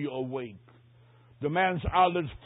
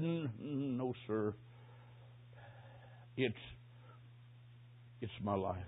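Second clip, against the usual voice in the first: rasping, hoarse whisper, very quiet and very slow; 5 semitones lower, 14 dB quieter than usual. Retelling what a man said, shaking his head: retelling a hoarse whisper. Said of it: "Then a hoarse whisper, he said".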